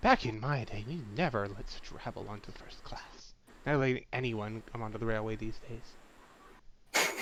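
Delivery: hushed, very quiet, pointed stage whisper. Narrator voicing first-class passengers murmuring about raucous behavior, in a loud stage whisper. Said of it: "whispering, but, like, loud enough that you can hear".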